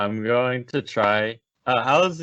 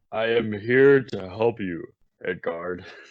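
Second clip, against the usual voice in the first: big, loud, booming voice. In a tabletop game, a player speaks to the head guard in a booming voice. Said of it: "Can you do it in the voice that you are trying to do? ... Booming".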